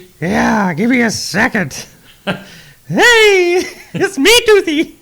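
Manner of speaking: very high, slow, squeaky cartoon voice. Playing the sponsor's mascot Toothy on the studio show, Mickey-like voice. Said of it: "why am I sounding a little like Mickey today?".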